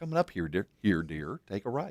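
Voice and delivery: gentle, soothing female navigation-system voice. Describing the navigation voice giving directions that was liked: imitating a soothing woman's voice. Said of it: "I liked the soothing voice of a woman saying".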